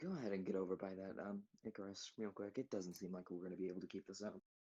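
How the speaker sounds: hushed, very quiet, soft half-whisper. Telling another character in a quiet moment to get over by Icarus, half-whispering. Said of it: "I'm trying to be very whispery".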